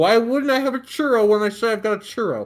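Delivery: mouth full of food, high and loud. Eating a churro while chatting with a co-host, talking with mouth full. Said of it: "I'm speaking with my mouth full of churro right now".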